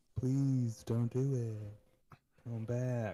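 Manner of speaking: sarcastic, mocking pleading delivery. Retelling the trailer's pleas for her not to leave the vault: sarcastic pleading. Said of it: "it very sarcastic".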